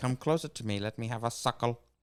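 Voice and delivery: scheming, evil movie-villain voice. Riffing a line for a movie character: Doctor Evil voice. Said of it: "Is that like a Doctor Evil voice?".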